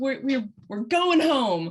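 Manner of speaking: screaming. Playing a character, calling to everyone inside the snake: screaming. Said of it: "I'm screaming to everyone out of the snake".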